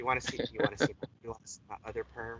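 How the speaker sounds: low, soft, seductive sexy voice. Joining in imitating Bob Ross's sexy voice about his perm. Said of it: "in that sexy voice of his".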